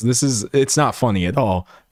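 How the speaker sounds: ordinary talk, nothing marked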